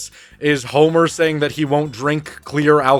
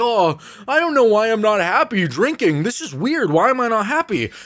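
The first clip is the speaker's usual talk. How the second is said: high-pitched cartoon housewife voice; 7 semitones higher than usual. Retelling how Marge wonders why drinking is not fun: Marge Simpson voice. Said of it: "she's like".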